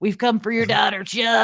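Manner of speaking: scratchy, scraping ghoulish monster voice. Asked by someone on the stream to do it, performing the Beetlejuice voice. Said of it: "do the Beetlejuice voice now".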